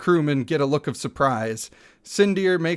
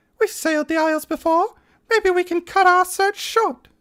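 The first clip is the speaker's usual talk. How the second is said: put-on acted, very high girly voice; 14 semitones higher than usual. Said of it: "do my actual girl voice".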